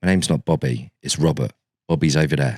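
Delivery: mock deadpan, low, dead-straight and level. Retelling a first on-camera interview, imitating Robert's deadpan reply. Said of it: "he looked deadpan at me".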